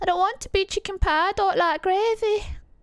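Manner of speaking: put-on Yorkshire accent, pitched high. Recalling a film they loved, quoting it in a Chicken Run Yorkshire accent. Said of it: "that was a Yorkshire accent in that".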